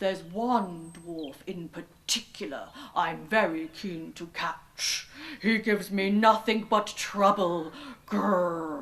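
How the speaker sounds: big friendly low slow growling bear voice. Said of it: "there stood instead a big brown bear. / He's a kind and friendly bear." / But the bear called after her. / Grrr."".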